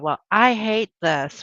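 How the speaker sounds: ordinary delivery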